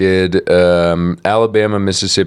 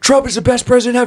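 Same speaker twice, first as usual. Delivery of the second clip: put-on drunken man's yell, higher. Retelling an interview with a drunk supporter yelling into the mic: imitating a drunk man yelling. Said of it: "he was wasted, and he was, like, yelling into the mic".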